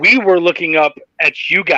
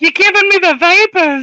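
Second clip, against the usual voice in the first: fake, very high, slow girlish soprano; 14 semitones higher, 3 dB louder than usual. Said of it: "put a little bit of soprano in your voice".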